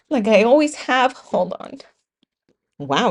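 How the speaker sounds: crying while talking. Recalling a pep talk from dad; crying while talking. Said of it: "I'm all crying on here".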